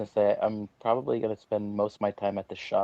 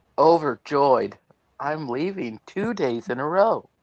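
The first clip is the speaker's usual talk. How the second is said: fake overjoyed, laid on, pitched up, loud; 6 semitones higher, 6 dB louder than usual. Answering a request to sound happier about staying home: mock overjoyed. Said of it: "try not to sound so happy".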